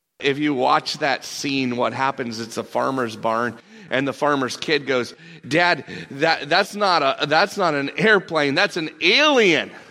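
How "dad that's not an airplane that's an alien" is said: ordinary delivery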